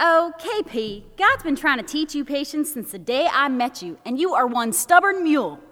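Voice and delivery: put-on good, full, natural Texas accent. Quoting a friend who phones and laughs at the speaker's anxiousness, in a Texas accent. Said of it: "great Texas accent".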